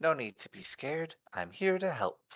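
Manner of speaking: soft, calming, swooping elven half-whisper. Bubbles half-whispers in a frightened companion's ear, calming elven half-whisper. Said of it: "whispers in your ear in like an elven, calming elven voice".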